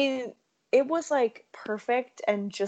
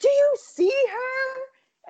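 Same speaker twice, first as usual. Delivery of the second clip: blatant, very high, very slow, drawn-out yell; 5 dB louder than usual. Telling a bar story, acting out a woman at the bar, retelling a yell. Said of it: "legitimately yelling".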